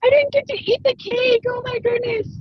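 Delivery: very high, acted sobbing voice, crying wail. Speaker retelling what she told him in tears, imitating herself crying. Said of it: "I'm like dying crying because I'm like".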